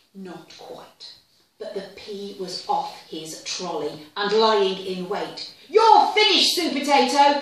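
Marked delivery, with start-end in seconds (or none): 5.6-7.4 very loud, high-pitched shrieking at full volume. Narrator reading a story, voicing the pea's line to supertato, shrieking. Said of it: "he shrieked".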